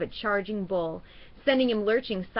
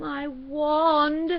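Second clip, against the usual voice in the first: trembling, shaky, high voice; 7 semitones higher than usual. Narrator reads Ron's line after the crash, looking at his wand, in a shaky voice. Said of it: "said Ron in a shaky voice".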